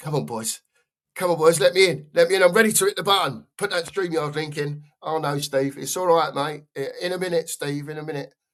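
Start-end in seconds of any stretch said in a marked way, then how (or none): 0.0-4.8 eager, keen, begging, pleading voice. Imitating Steve on his treadmill, impatient to be let in: imitating Steve. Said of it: "He's on his treadmill like this. He's going".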